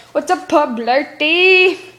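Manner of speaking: put-on Jamaican-accented speech. Retelling a story, voicing a jamaican character's greeting in a jamaican accent. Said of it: "He's Jamaican".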